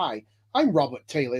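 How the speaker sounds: put-on English accent. Retelling a movie host introducing himself, imitating Robert Townsend's English accent. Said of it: "It sounded like he had an English accent".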